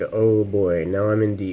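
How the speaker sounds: ordinary talk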